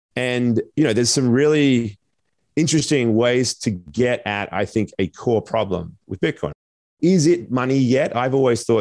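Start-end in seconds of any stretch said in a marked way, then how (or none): 7.0-8.1 yet stressed hard, pitch raised higher. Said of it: "I emphasize the word yet".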